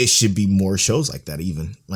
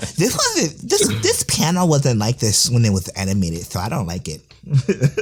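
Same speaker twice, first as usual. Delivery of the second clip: whiny, sing-song complaining voice; 5 semitones higher than usual. Mocking complaints from a toxic anime fan on Twitter: imitating a toxic anime fan. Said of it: "my Toxic Annie Twitter impression".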